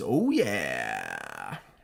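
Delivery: very low, rough, swooping, drawn-out mascot growl. Explaining a trivia answer by imitating the Kool-Aid Man. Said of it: "smashes through a wall and says".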